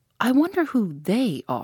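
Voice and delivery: thinking aloud, half to himself, slow, swooping. Tommy, eating from a loaf, musing. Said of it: "mused Tommy".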